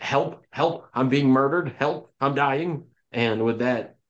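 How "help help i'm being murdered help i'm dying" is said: hammy, unconvincing staged cry. A game character screams from around a building, yelling for help. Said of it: "and she yells".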